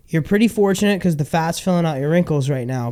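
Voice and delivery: normal talking voice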